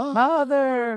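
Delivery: calling out high and loud.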